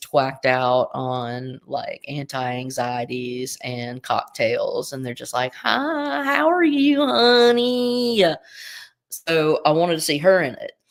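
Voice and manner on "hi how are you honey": very high, slow, drawn-out southern lady drawl. Describing an actress's character, the speaker imitates a well-to-do southern socialite. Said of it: "a southern woman".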